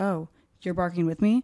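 ordinary delivery

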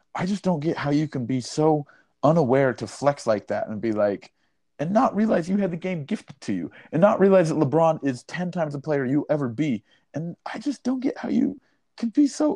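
voice creeping up while running on. Ranting about a basketball player, voice getting higher and higher. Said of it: "my voice is just getting higher and higher".

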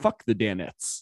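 usual speaking voice

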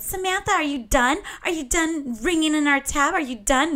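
high-pitched, taunting, mocking yell. Retelling how a woman back at her table yelled at her: retelling a mocking yell. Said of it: "She starts yelling".

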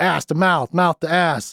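put-on furious ranting man. Quoting a movie character ranting about kids these days: imitating an angry guy. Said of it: "this angry guy".

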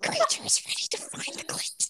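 hushed, breathy, whispered creature voice. Addressing listeners in a put-on bit: Gollum-like creature voice. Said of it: "I can't do the creature voice".

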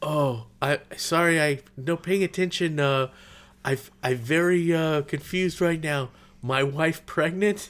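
put-on halting, stumbling, broken-English non-native foreign accent. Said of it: "that's not a politically correct accent".

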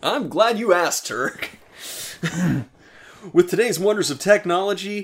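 high infomercial pitchman voice, selling hard. Acting out a sponsor ad as an infomercial with the other speaker: infomercial pitchman voice. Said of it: "Can we do this like an infomercial?".

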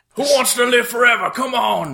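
loud yelling. Calling soldiers to follow into battle, yelling to troops. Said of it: "I'm gonna yell to the".

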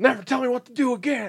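very high, loud, shrill, screeching scream. Retelling a scene where Rita flies off into space: imitating Rita screaming. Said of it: "as screaming at him".

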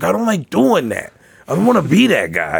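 big meathead bro voice, pitched high, swooping. Retelling a fight over cheese balls, imitating a meathead guy. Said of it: "He's just this big old meathead guy".

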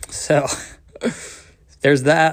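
laughing while talking, cracking up. Explaining own written opinions on the Bible, laughing while talking. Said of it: "cracking up".

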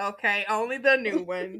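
slow, mock snooty voice with laughter.

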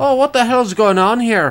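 put-on English accent sliding into Irish. Retelling what some Englishmen said coming into a bar: imitating an English accent, comes out Irish. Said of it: "I'm terrible with accents because that's just an Irish accent".

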